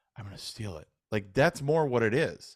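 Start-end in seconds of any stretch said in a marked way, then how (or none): 0.2-0.9 low, quiet mumble under the breath. Recounting the most quotable scene, mumbled under the breath. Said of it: "is is all under his breath, right? Like he's like".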